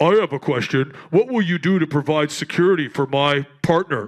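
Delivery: overdone macho tough-guy voice, deep and loud. Speaker mimics a man asking about security for his partner: imitating an over-masculine voice. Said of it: "like like over masculine".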